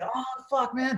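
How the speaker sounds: mock agonized, high, pained scream. Retelling how a crippled runner was thrown into the van: imitating a runner screaming. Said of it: "he's screaming".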